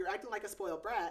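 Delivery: ordinary delivery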